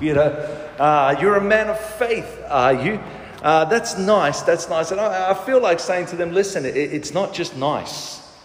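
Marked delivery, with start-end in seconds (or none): 1.2-3.0 mock-condescending, put-on superior tone. Imitating how people ask about his faith, mock-condescending tone. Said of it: "they say that with the same condescending tone".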